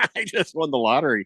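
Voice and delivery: ordinary talk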